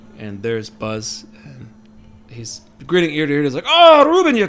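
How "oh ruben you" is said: put-on Scottish Cajun accent, much higher, louder. Narrating a game scene, the speaker voices Buzz opening the door to the guests: Scottish Cajun accent. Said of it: "I'm trying to do a Scottish Cajun accent".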